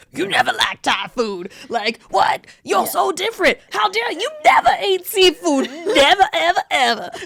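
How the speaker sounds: put-on high, swooping Southern cartoon character voice. Imitating her family when she came home from college, in a Southern cartoon voice. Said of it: "Why does your family sound like, Southern cartoon characters?".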